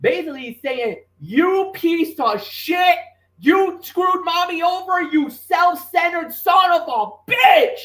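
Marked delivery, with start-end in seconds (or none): 1.2-7.8 frantic, freaking-out commentator voice. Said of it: "[name] freaking out".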